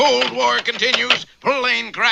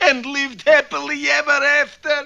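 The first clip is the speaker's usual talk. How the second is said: tearful, sobbing, weeping through the words; 3 semitones higher than usual. Finishing the story of Jack and the giant, crying while speaking. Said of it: "Why are you crying?".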